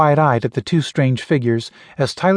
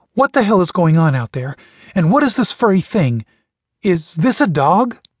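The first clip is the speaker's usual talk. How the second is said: trembling voice with a noticeable quaver; 4 semitones higher than usual. A woman speaks out of the darkness, with a noticeable quaver. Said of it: "With a noticeable quaver".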